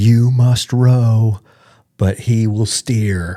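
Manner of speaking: put-on loud macho bro shouting. Describing a reel that keeps popping up, the speaker quotes a guy: imitating a guy yelling. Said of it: "he's just yelling like".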